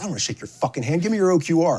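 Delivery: put-on grim, angry voice. Retelling an officer's greeting when he reported in, imitating an angry officer. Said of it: "grim-faced, angry dude".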